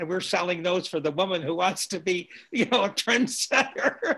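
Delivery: talking through chuckling laughter. Speaker recalling a young woman who came in wearing shoulder pads, laughing while talking. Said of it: "I'm laughing about it this many years later".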